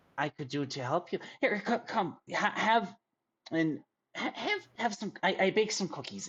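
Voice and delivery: high, quick, eager, grateful mother character voice. Narrating to the players, voicing the little boy's mother as she turns back to them. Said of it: "his mother uh turns back to you and says".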